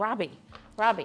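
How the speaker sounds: usual speaking voice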